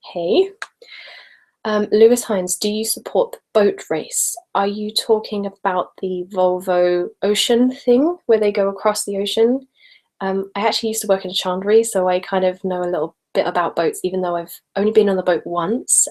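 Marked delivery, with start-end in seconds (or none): none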